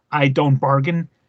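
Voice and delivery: put-on threatening whisper. Retelling a line said to an agent after a shooting: imitating Tommy Lee Jones whispering.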